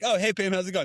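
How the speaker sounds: bright, cheerful voice. Retelling a TV scene where Derek greets a neighbor: cheerful Derek from Shrinking voice. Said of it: "with such, like, a happiness in his face".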